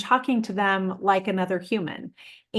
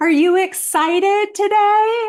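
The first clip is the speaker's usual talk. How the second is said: put-on very high, very loud baby talk voice; 13 semitones higher, 8 dB louder than usual. Showing how adults greet a small child in the studio, in a high voice. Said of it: "we talk really like in a high voice".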